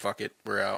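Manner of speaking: ordinary talk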